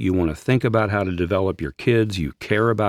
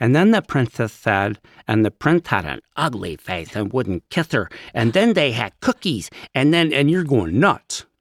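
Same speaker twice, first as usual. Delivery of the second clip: put-on valley girl voice with a lisp; 3 semitones higher than usual. Telling a silly princess story, in a lisping Valley Girl voice. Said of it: "I love your Valley Girl lisp voice".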